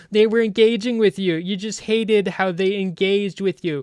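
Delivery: sneering, high, loud, mocking put-on critic voice. Speaker mimicking a bad-faith critic's reply, in a mocking imitation voice. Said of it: "I'm doing the voice again".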